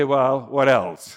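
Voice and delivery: slow, matter-of-fact shrugging tone. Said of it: "take this in a matter-of-fact way".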